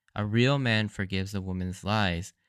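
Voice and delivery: ordinary talk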